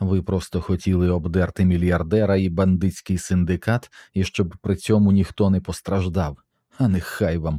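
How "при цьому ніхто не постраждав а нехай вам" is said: ordinary delivery, nothing marked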